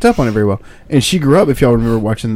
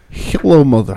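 put-on Russian accent. Retelling how she greets her mom on the phone: imitating a Russian accent. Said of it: "having the entire conversation in Russian accents".

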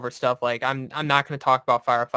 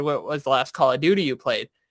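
mock sarcastic tone. Retelling asking a petty officer a question: imitating own sarcastic question. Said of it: "I sarcastically looked over".

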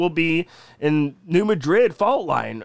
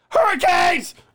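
very high shriek for dramatic effect; 12 semitones higher, 3 dB louder than usual. Announcing theory number two for dramatic effect, screaming. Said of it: "Why are you screaming?".

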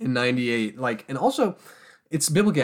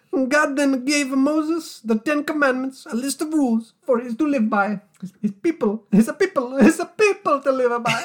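put-on Italian accent, much higher; 13 semitones higher, 4 dB louder than usual. A podcaster reads a passage aloud in a voice meant as a would-be mafia boss, Italian dad. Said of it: "I was supposed to be a mafia boss".

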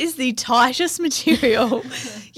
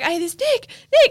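put-on scream, much higher pitch; 10 semitones higher than usual. Retelling how a woman screamed at the speaker from across the water: retelling her scream. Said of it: "she's just screaming at me".

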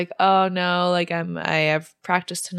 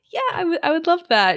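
thrilled, eager, higher-pitched delivery; 10 semitones higher than usual. Retelling a woman's reply to a man who may call her tonight, imitating someone super excited. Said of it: "And she's super excited".

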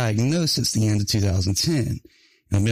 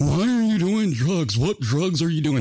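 mock panicked, frantic, accusing outburst, pitched up; 6 semitones higher than usual. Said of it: "she's screaming at my mom".

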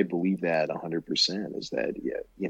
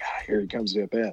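whispering, much higher pitch; 3 semitones higher than usual. Retelling watching a game at 2 a.m. while parents sleep; retelling a whisper. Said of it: "so I'm like whispering".

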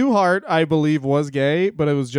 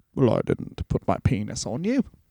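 very British-sounding voice; 4 semitones lower, 5 dB quieter than usual. Describing a prankster as very British in a way: Lord Alfred Hayes impression. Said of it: "Was that a good impression?".

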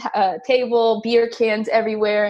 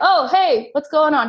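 put-on pitched-up Icelandic accent; 6 semitones higher than usual. Retelling how the man renting his guest room greeted them: Icelandic accent. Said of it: "He has like this Icelandic accent".

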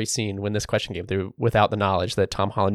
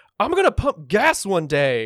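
put-on, very drunk, slow drawl, pitched up; 11 semitones higher than usual. Retelling what a drunk frat guy said: imitating a drunk guy. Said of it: "very clearly drunk".

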